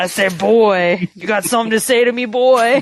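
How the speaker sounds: put-on cartoon rooster voice. Joking about how Kratos would change the story, speak as Kratos as Foghorn Leghorn. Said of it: "Kratos as Foghorn Leghorn".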